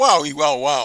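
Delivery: belted out big and loud. Doing voices for the viewers: Christopher Walken voice. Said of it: "Christopher Walken".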